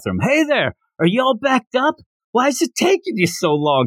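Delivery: mock very high, loud hollering yell. Retelling a scene where a character yells into the bathroom: imitating Goku yelling. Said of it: "he's yelling into the bathroom".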